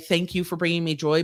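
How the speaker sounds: ordinary delivery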